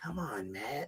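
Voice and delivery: soft, breathy mock scolding whisper.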